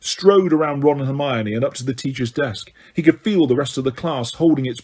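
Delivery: ordinary delivery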